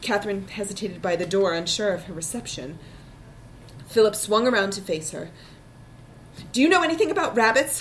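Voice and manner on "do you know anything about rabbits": tense, tight-voiced, with raised pitch. A man turns to face a woman at the door and asks, in a tight voice. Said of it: "he asked in a tight voice".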